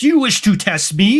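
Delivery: big booming wizard voice. In a fantasy role-play, a character challenges riders with arcane power: booming voice. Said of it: "He says in a boom booming voice".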